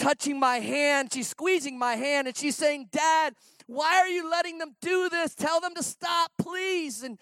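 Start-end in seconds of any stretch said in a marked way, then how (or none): 2.9-7.0 mock crying child voice, high, tearful, pleading. A father recounts his daughter's spinal tap, retelling her words: imitating a crying, screaming daughter. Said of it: "she's screaming and she's crying".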